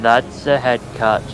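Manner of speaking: flat, monotonous voice. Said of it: "you need to do it with that sort of monotonous voice".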